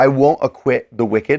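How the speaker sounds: ordinary delivery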